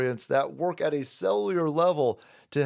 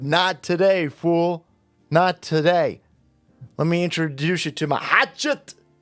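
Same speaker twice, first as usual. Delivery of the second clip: bad Scottish accent, drawn out; 6 dB louder than usual. Retelling a little girl facing a grown man in a park, bad scottish accent. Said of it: "I don't know how to do a Scottish accent".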